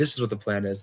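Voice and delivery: whispered. Retelling telling a teammate the voting plan: retelling a whisper. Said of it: "so we whisper to".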